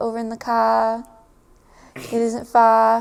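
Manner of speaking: slow Australian accent, r turned to ah. Describing how Australians drop the R sound: Australian accent, dropped R. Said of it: "in their accent, with the when the R sounds like an ah".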